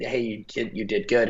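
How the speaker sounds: put-on thick, broken, heavy Russian accent. Retelling a coach's praise after a drill: broken Russian accent. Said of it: "in his broken Russian accent".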